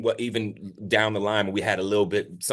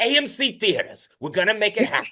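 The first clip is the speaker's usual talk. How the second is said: put-on very high old lady character voice; 13 semitones higher, 4 dB louder than usual.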